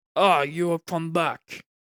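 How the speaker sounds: rough put-on Russian accent. Narrating a story, voicing the guild leader Roman in a rough Russian accent. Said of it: "giving him a rough a Russian tone".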